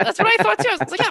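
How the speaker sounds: put-on delighted tone.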